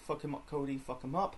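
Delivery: ordinary delivery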